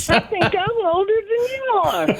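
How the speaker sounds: very high, dummy-like ventriloquist puppet voice. Asked to let the ventriloquist doll speak: ventriloquist doll Hank's voice. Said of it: "I can do Hank".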